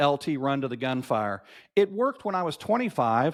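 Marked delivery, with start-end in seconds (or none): none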